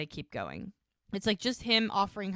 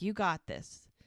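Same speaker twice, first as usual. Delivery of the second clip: plain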